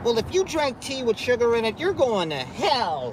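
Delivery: very high-pitched preachy voice, word "hell" drawn out. Mocking strict religious people's judgments: imitating a preachy Bible thumper. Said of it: "heavy Bible thumpers that are like".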